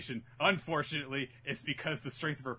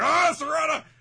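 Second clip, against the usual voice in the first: put-on yell, much higher, louder; 14 semitones higher, 12 dB louder than usual. Retelling a scene, voicing Sakura as she shouts at Sarada: Sakura yelling, retold. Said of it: "I raised my voice".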